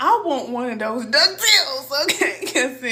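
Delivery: laughing while talking. Retelling asking for DuckTales, laughing while talking. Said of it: "I'm cracking up".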